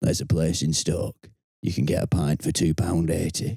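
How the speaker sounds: put-on conspiratorial tone. Retelling what a hard-man cousin said, leaning across the table: imitating a conspiratorial tone.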